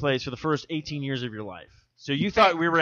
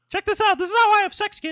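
put-on cartoon mouse voice; 4 dB louder than usual. Among friends, one addresses the kids, doing a Mickey Mouse voice. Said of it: "now you've become this Mickey Mouse".

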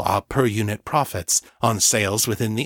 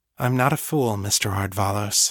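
said softly and gently, slower pace. Lena answers Mr. Ardvalos, who tries to exert his will over her, said softly. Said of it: "she said softly".

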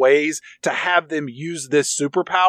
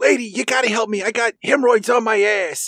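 cartoon-like pleading, pitched a bit higher; 6 semitones higher than usual. Retelling a call to a woman, done in the Mort Goldman voice from Family Guy. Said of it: "he does his Saul Rosenberg / Mort Goldman from Family Guy voice".

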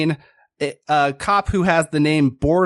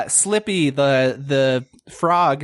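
ordinary talk

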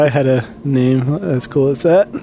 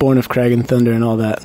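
normal talking voice

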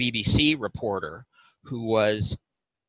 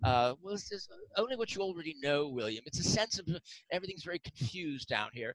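bad fake English accent, very quiet, hushed, high; 5 semitones higher, 12 dB quieter than usual. Acting out a quoted remark addressed to William: very bad English accent. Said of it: "it's a very bad English accent".

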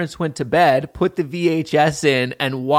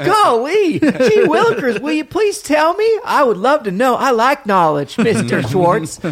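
put-on very high, swooping, old-timey film kid voice; 10 semitones higher, 4 dB louder than usual. Answering a question about Montana kids, hamming it up: 1940s movie kid voice. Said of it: "speak like they're in nineteen forties movies".

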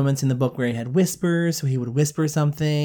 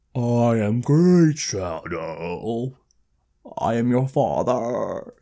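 very slow, every word drawn out and laid out; 3 semitones lower than usual. Quoting a character from the readings: Great Shadow voice. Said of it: "that's the kind of voice Great Shadow had".

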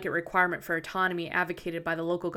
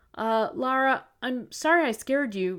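very slow, drawn-out, sheepish sorry; 6 semitones higher than usual. Vic apologizes to Lara after scaring her into dropping her glass, sheepishly. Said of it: "Vic said sheepishly".

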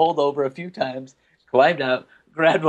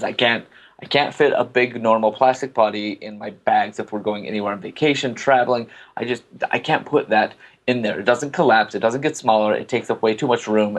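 usual speaking voice

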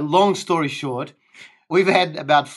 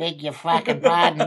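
ordinary talk, nothing marked

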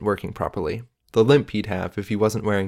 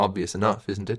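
ordinary delivery, nothing marked

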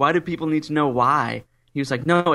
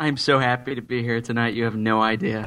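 sarcastic mock enthusiasm, lower; 3 semitones lower than usual. Greeting the host on joining the show: sarcastic fake happiness. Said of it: "I can hear it in your voice".

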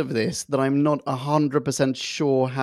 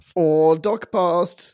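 spoken loudly; 3 semitones higher, 4 dB louder than usual. A host opening a Doctor Who podcast, saying it loudly. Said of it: "I didn't mean to say that so loudly".

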